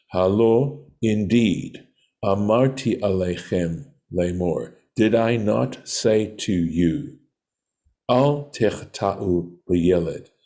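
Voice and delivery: ordinary talk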